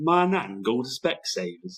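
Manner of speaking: put-on slow, high Birmingham Brummie accent, radio-ad style. Quoting a radio advert to a friend, Specsavers advert Brummie accent. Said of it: "A wee bit of Brummy".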